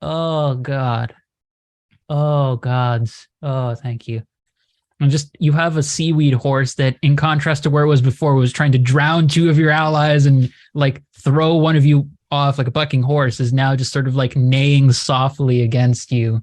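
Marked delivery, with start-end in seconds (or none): 0.0-4.2 weary, grumbling creature voice, tired and disgruntled. Voicing the kelpie, a seaweed horse with a headache: tired, disgruntled voice. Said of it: "tired, disgruntled voice come out of the Kelpie".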